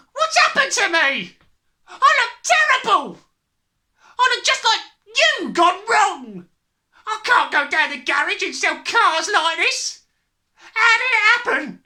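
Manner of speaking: very high, shrill, high-pitched yell. Reading a story aloud, the narrator voices the father: father yelling. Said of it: "your father feels he's in for another great money-making day today at the garage. I've got a few little beauties I'm going to flog to the idiots this afternoon. / he strode in and slapped his son on t".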